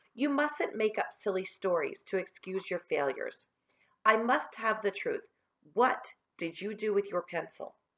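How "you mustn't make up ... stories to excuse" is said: ordinary delivery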